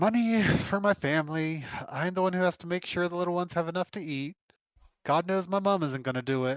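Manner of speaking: words sighed out. Game narrator voices a woman asked about her parcel's contents, sighing. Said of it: "and she sighs".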